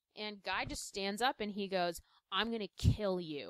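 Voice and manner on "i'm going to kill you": put-on dead-serious menacing tone. Retelling a comic fight where Guy Gardner threatens Metamorpho: imitating Guy Gardner, dead serious. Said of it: "He's dead serious".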